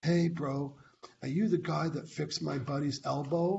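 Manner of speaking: mock shy, timid, mousy, meek voice. Retelling a big guy at the gym asking the speaker a question, imitating a shy, timid guy. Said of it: "really shy, he turned into a little mouse".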